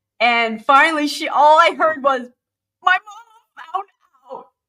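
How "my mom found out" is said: mock high, hysterical sobbing, losing it, barely coherent. A counselor retells what a woman said in her office, imitating hysterical crying. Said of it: "she is hysterical crying".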